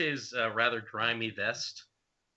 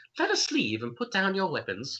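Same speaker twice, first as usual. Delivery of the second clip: put-on high, swooping female orc voice going for girlish; 6 semitones higher than usual. Voicing the orc lady putting away her crossbow: orc lady girl voice. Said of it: "that's not a girl voice".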